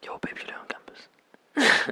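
whispered, murky. Acting out creeping up behind someone at a dance, in a murky whisper. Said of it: "The whispering, the murky voice".

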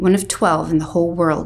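ordinary delivery

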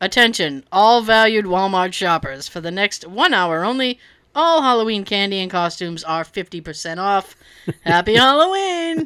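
convincing store PA announcer voice. Someone pranks a store's shoppers over the PA system in a convincing announcer voice. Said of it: "in a very convincing announcer voice".

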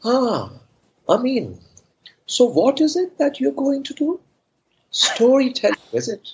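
acted lilting sarcasm, very high, swooping, slow. Retelling his mother's first question about storytelling, imitating her sarcasm. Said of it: "Malayalis speak with a lot of sarcasm".

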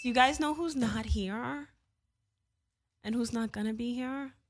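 speaking as with swollen lips. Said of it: "Why do you sound like [name]?".

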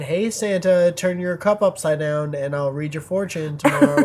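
usual speaking voice

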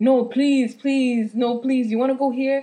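loud, repeated pleading and begging. Retelling how a friend begged to stay outside: imitating a friend begging. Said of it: "He's like".

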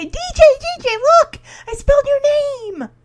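shrill, high, loud calling scream, projected far. Retelling a scene where a character screams for her sister: imitating Michelle screaming. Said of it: "she screams for D J".

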